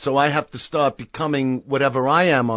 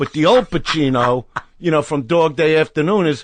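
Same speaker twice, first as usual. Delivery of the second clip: ordinary delivery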